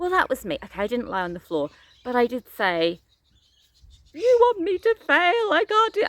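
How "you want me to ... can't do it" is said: mock very high-pitched, near-tears tearful outburst. Retelling a hike meltdown, imitating own tearful meltdown. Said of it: "I actually cried".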